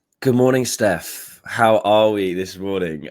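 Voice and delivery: croaky, hoarse voice. Greeting the other speaker in the morning with a croaky voice. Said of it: "apologies for my croaky voice".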